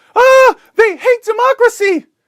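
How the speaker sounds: very high, loud, shrill, stretched-out scream. Acting out the journalist back at the Taliban: imitating someone screaming. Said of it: "she goes back to the Taliban and screams".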